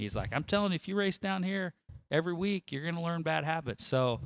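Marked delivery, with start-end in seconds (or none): 0.3-3.9 put-on Oklahoma accent, pitched up. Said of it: "is Oklahoma accent".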